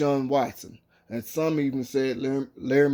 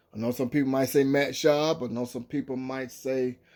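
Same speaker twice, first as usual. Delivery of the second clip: ordinary talk, nothing marked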